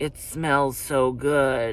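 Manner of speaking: low, very slow, drawn-out, sinister psychopath voice. Speaker acting out how a lawsuit portrayed a man, mock creepy psychopath voice. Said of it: "like some kind of psychopath".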